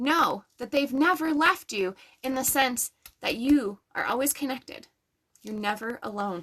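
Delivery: choked-up voice catching with emotion. Speaker addressing the audience tonight, getting choked up. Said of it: "I'm getting choked up tonight".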